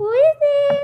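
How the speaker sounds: very high, loud, put-on girly falsetto. A big, large man retells what he said, in the girliest voice he could make. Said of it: "In the girliest voice I could try to make".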